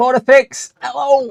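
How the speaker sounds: shouting. Struggling with a glued part during a disassembly, shouting. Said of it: "Sorry for shouting".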